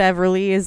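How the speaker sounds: ordinary delivery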